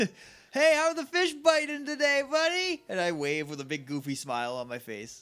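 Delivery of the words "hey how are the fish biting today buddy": loud yelling, pitched much higher. In a roleplay, calling to a man on the other side of the pond; yelling loudly. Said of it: "I'm going to yell loudly".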